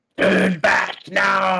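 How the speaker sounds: high, unhinged, put-on crazy voice. Speaking right next to a crack, putting on a crazy voice. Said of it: "I'm gonna do like a crazy voice".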